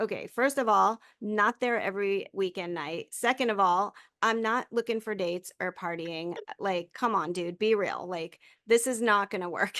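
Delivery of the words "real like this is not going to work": ordinary talk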